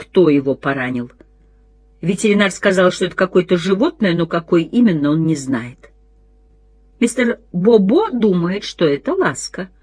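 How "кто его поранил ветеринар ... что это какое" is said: usual speaking voice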